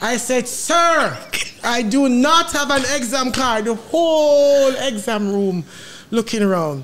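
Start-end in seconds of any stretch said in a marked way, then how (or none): 0.5-3.6 bold, outright, self-owning declaration. Recalling answering out loud in an exam room, retelling a bold declaration. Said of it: "boldly declare what you declare".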